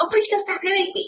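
very high, pleading, begging character voice. Imagining someone being beaten by a cop, switching to Pee Wee Herman voice. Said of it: "the Pee Wee Herman voice will come".

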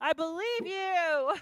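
full-on scream, high and very loud. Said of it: "you're screaming".

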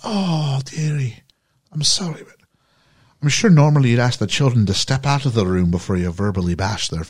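put-on elderly woman with Irish accent. Retelling a scene where the nanny answers criticism of the father, Mrs. Doubtfire voice, turned Irish. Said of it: "Oh, I've made her Irish".

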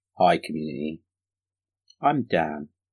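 really quiet, hushed, deliberately unexcited low voice. A co-host greets the community, really quiet and unexcited. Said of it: "talking in a really quiet and not excited way".

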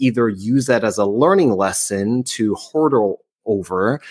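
ordinary talk

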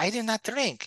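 very high-pitched, lisping voice. Retelling a movie line: Mike Tyson accent with lisp. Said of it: "with Mike Tyson's accent".

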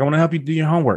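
put-on high, small toddler girl voice. Retelling what a three-year-old daughter said: imitating three-year-old daughter. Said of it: "She's talking to me just like this".

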